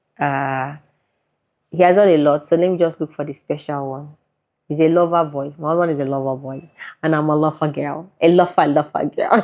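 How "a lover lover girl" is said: joking, put-on Akwa Ibom accent. Joking while describing the couple: put-on Akwa Ibom accent. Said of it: "That's my Akwa Ibom accent there".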